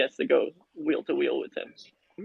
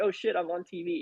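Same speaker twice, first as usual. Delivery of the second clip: usual speaking voice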